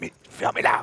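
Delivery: hissed without voice.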